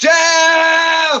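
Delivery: high, loud shout.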